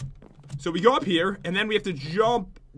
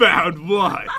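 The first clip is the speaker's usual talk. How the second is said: mock-grumpy tone, louder; 4 dB louder than usual. The speaker mimics the other person's earlier reply, mimicking a grumpy tone. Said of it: "You sound so grumpy about it. Like".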